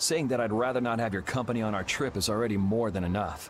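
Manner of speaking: ordinary talk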